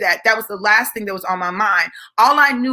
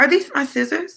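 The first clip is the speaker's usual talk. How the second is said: put-on calm, crazy tone, higher pitch; 5 semitones higher than usual. Retelling asking about scissors during a fight: imitating own calm, crazy voice. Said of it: "'Cause I had that calm, crazy voice".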